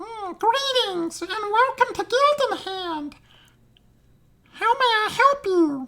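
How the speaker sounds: very high, loud, squeaky helium gnome voice. Voicing a gnome greeting visitors to Gilden Hand, in a helium-sounding voice. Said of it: "it always sounds like they they've been breathing helium".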